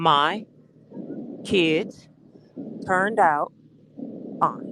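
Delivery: slow, low, halting, deliberate phrasing with pauses. Answering a Gen X question so the asker understands, slow and deliberate. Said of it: "let me say it slow so you understand it".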